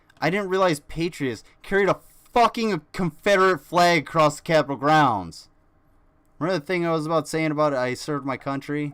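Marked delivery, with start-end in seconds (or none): 0.2-5.5 angry, heated, pissed-off outburst. Ranting about unequal treatment under the law: getting pissed off. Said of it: "I'm getting a little pissed off".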